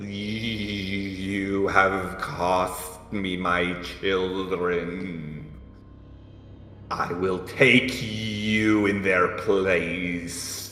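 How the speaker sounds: voice like buzzing insects. A creature turns its gaze on the owl and the elf, speaking in a horrible buzzing insect voice. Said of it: "in a horrible voice that sounds like it's made up of insects buzzing".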